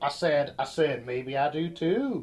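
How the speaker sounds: put-on cartoon rooster voice. Host, teased about picking up guests' affectations, speaks in a weird Foghorn Leghorn voice. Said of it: "talk with a weird foghorn, leghorn voice".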